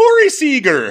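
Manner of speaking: very high, loud, belted Irish leprechaun accent. Showing how any name sounds in that funny accent: Lucky Charms leprechaun accent. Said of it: "if you just say with that funny accent".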